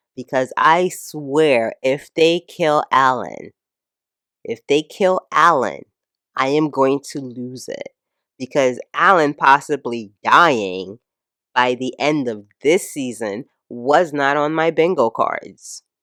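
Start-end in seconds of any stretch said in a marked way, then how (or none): 6.4-7.9 deep, low voice right on the microphone. Speaker moves closer to the mic to show how serious he is, deeper voice close to mic. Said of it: "I'm moving closer to the mic and speaking in a deeper voice".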